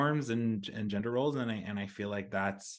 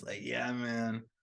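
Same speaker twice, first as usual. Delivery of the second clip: fake, put-on stoner-guy way of talking; 4 dB quieter than usual. Asking whether to do the stoner voice, then a put-on stoner voice. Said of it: "should I do the stoner voice while I'm doing this?".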